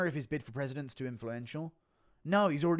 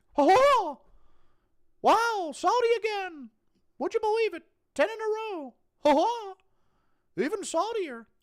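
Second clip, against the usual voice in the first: high, raised squeak, said slowly; 7 dB louder than usual. Reading out an impression prompt, then performing it; Mickey Mouse impression. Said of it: "Impression of Mickey Mouse taste testing".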